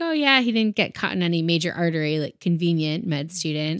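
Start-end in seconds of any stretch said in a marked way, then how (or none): none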